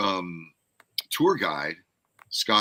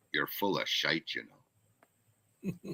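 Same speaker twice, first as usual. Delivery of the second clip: low, hushed, slow, drawn-out delivery; 4 semitones lower, 9 dB quieter than usual. Retelling what a star said to a friend: Sean Connery impression, low voice. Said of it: "in a low voice".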